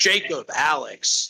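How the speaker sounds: put-on, imitated American accent. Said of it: "did, like, an American accent".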